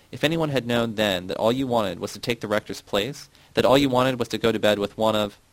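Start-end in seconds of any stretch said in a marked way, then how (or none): none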